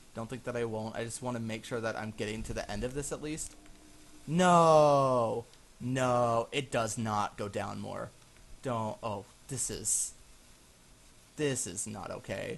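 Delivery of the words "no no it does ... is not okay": panicking horror, loud, very slow, stretched "no". Playing a game as the path keeps going down further: horrified. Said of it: "I'm so horrified right now".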